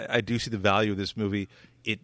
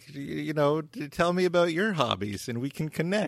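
put-on high, slow, grandfatherly old man voice; 6 semitones higher than usual. Imitating David Lynch sounding like a grandfather: imitating David Lynch as a grandfather. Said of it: "he sounds like a, like a grandfather being like".

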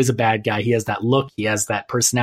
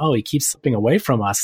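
very snide, needling sarcasm, acted out. Recapping a scene, acting out a woman's suspicious line, mock-sarcastic and snide. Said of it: "like a very sarcastic kind of".

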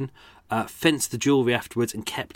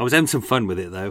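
ordinary delivery

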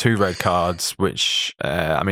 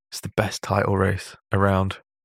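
playful, joking mock whisper. Introducing the next topic after a break: playful mock whisper. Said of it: "I'm gonna whisper this".

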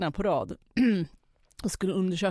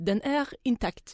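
put-on Swedish spoken with a French accent; 4 semitones higher than usual. Retelling how a french woman came in and gave her verdict, in a french accent. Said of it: "med fransk brytning så här".

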